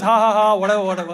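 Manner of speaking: usual speaking voice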